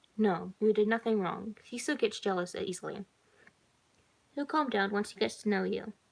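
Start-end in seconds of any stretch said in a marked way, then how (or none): none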